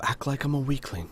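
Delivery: very soft, very quiet, hushed undertone. Voicing a character asking an ally to play it up: speaking very quietly. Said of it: "Al will say very quietly".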